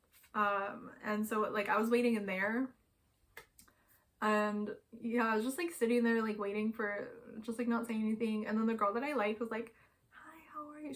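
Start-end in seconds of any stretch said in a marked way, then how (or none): 10.1-10.9 tiny, hushed, high, barely audible voice. Retelling how a girl greeted them while they waited: imitating someone speaking quietly. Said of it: "She said it so quietly".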